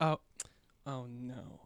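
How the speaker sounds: quirky, funny lilt on "oh no". Imitating a character's funny way of saying oh no: imitating his funny inflection. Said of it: "The way he says it is just hilarious".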